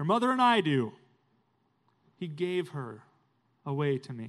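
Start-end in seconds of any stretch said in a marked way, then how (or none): 0.0-0.9 very loud, booming, parade-ground military voice. The father-in-law answers the pastor's question at the aisle, Jack's loud army-man voice. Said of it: "in his loud army man voice".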